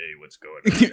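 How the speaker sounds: very low, fake deep grown-man voice. Retelling how he talked in game lobbies as a little kid: fake grown-up man voice. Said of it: "how I like used to talk".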